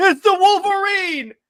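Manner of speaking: high, loud, alarmed yell. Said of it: "you hear a Reaver say".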